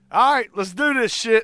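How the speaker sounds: loud, high-pitched, charged-up holler. Retelling how a man came out of the room, imitating him yelling. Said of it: "he's like yelling".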